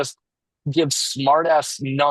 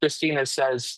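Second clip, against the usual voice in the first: normal talking voice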